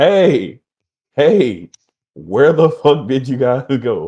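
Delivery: high, very loud, far-carrying yell. Separated from the others, calling out to them down the corridor, yelling. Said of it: "I'm literally yelling down the corridor".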